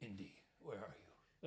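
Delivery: very deep, most masculine voice, very soft and hushed. Imagining an adult character waking up drunk and calling out: deepest, most masculine voice. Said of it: "with the deepest, most masculine voice".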